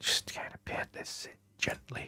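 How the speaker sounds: very quiet, soft, breathy, hushed whisper. Painting on the computer, the speaker explains the step while whispering. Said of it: "What am I whispering for?".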